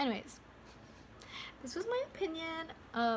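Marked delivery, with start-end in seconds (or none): 1.6-2.7 voice suddenly jumping up to high pitch. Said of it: "why did my voice just go up that mu-, that high?".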